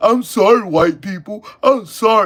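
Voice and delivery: loud, scornful, ridiculing tone. Mocking a man who apologized on TV: mocking imitation of him apologizing. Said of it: "so he can go".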